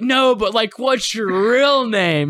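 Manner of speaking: put-on boozy drunken delivery. Acting out talking to strippers at a strip club: acting drunk. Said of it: "I'm the guy who's, like, drunk".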